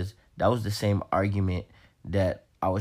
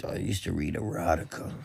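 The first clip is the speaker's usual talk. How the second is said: put-on creepy trucker voice, quieter; 4 dB quieter than usual. Asked what type of book, repeating the erotica confession in a rapey trucker voice. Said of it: "Don't have to say it in a fucking rapey trucker voice".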